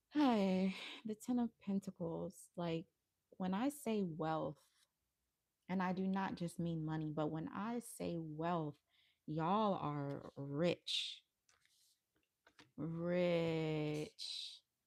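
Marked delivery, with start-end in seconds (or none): 9.2-14.6 very slow, lingering emphasis, a little sensual. A tarot reader addressing the collective community, said slowly. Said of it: "I feel like I had to say it slow".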